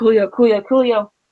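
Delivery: ordinary delivery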